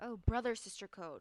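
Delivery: plain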